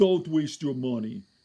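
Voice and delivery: put-on German-style accent. Recalling a dismissive former neurologist, the speaker imitates the doctor's accent. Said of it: "He had an accent".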